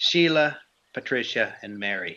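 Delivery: full Irish brogue, put on. Telling a family's history, naming the three sisters in an Irish brogue. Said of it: "I'm going into Irish brogue here".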